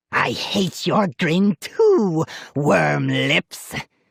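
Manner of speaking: slow, high, shrill dummy voice, drawn out. The dummy Slappy snaps back at Molly, high shrill Slappy voice. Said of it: "the dummy cried in a high, shrill voice".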